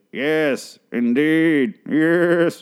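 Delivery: put-on high old-lady villain voice, yes drawn out. Retelling Lana's TV interview from bed, answering in an old lady Bane voice. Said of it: "she's like a super old lady Bane voice".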